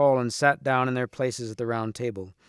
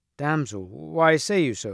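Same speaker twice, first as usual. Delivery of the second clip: usual speaking voice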